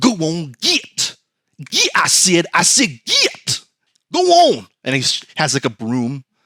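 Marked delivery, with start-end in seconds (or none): 0.0-4.7 very slow, drawn-out, swooping, high sing-song voice. Acting out God shooing someone off with a broom: Walton Goggins voice. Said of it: "he's like Walton Goggins in season four of Righteous Gemstones".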